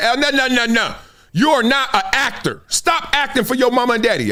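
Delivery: put-on harsh scolding tone. A youth coach retells telling off a player, retelling harsh scolding. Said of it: "I usually say it in a nicer tone".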